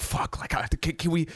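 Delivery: mock frantic, emotional, panicked, breathy half-whisper. Retelling own panic on a car ride: imitating own past panic. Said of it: "I started freaking out".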